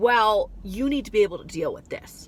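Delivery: ordinary talk, nothing marked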